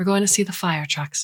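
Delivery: plain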